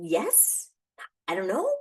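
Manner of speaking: mock flustered, slow, fumbling delivery. Speaker retelling own answer to a sudden question while doing dishes, mock-flustered answer. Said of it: "And I'd be like".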